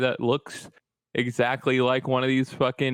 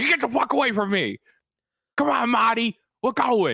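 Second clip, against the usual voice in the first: put-on high, furious shout in a Boston accent; 10 semitones higher than usual. Acting out being mad about anything: imitating an angry Boston shout. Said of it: "put people's faces in pavement".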